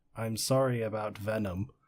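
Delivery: play-acted, utterly deadpan, flat monotone. Describing a film scene, the speaker quotes her line to Eddie: mock-deadpan delivery. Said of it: "in like the most deadpan voice".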